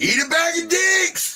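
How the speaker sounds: very high-pitched hollering voice. A storyteller acts out what a woman hollered: retelling a holler. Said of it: "she hollers out".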